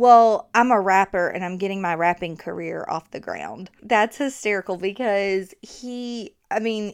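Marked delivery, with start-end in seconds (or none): 0.0-3.7 put-on, totally earnest, dead serious, bone-dry delivery. Retelling a husband's joke to a store clerk: imitating someone dead serious. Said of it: "he looked at her dead serious".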